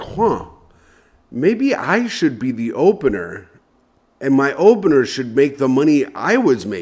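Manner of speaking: ordinary talk, nothing marked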